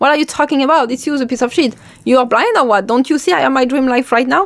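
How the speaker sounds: mock dripping sarcasm, dismissive. Retelling talking back to one's own doubt: retelling a sarcastic retort. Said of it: "I get sarcastic".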